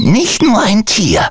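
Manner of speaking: very high voice, said through a giggle. A character answers his two friends, giggling. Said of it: "kicherte Timmy".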